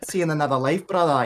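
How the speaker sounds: rough attempted Scottish accent. Quoting a scottish character's phrase from a tv show, attempted scottish accent. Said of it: "I can't really do a Scottish accent".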